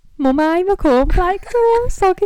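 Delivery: Brummy Birmingham accent. Demonstrating how a mum taught the accent, in a Brummy accent. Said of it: "how my mum taught me to speak in a Brummy accent".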